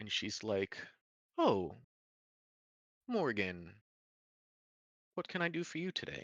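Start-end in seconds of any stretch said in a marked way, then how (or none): 1.4-6.3 high, lilting female elf character voice. Narrating a scene, the speaker voices a female high elf greeting Morgan, female high elf voice. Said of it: "a female high elf".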